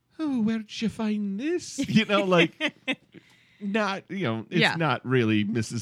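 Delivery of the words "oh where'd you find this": gentle, kind, motherly, matronly voice, pitched high. Imitating how a woman on the show first starts talking, kind, matronly voice. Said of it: "It's like kind and matronly".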